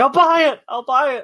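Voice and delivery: shrill, very high, loud desperate scream. Imagining being forced to watch game trailers, acting out mock desperate screaming. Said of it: "And I'm screaming".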